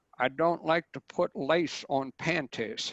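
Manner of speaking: put-on light southern American accent. Quoting an astrologer on short keywords; Marc Edmund Jones southern accent. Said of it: "in his kind of southern accent".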